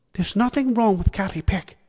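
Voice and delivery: bristling, defensive. A woman comes to a boy's mum's defence, bristling in defence. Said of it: "she bristled to his mum's defence".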